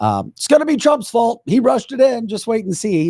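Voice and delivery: acted sneering sarcasm, very high-pitched. Discussing medical studies, voicing a typical sarcastic comment, mock sarcastic. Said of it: "That's the sarcastic comment".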